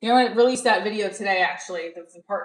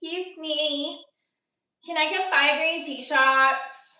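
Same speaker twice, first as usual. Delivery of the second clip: put-on pitched-up young adult voice, slow; 7 semitones higher than usual. Retelling a bartending joke, imitating a twenty-one-year-old ordering drinks. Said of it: "I went into the impression of the twenty-one-year-old".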